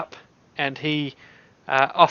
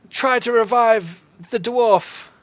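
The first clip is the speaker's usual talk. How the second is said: high-pitched shouting; 7 semitones higher than usual. Voicing a guard who steps up and calls out an order: shouting.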